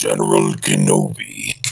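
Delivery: very deep, creaky voice dropped way low.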